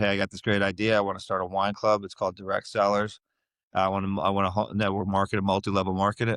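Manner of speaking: ordinary talk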